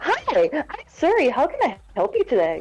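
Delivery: customer service voice. Explaining how they control their anger, demonstrating their customer service voice. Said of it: "I have a certain customer service voice".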